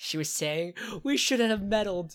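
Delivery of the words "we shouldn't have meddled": very loud, high-pitched, hysterical outcry. Recounting what Velma was saying, imitating Velma's hysterical tone. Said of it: "in the same like hysterical tone".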